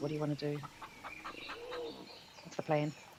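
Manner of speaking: hushed, huddled whisper. Asking companions in character for the plan: whispering. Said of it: "let's whisper to the other guys".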